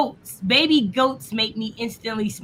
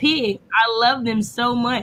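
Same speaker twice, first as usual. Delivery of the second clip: ordinary talk, nothing marked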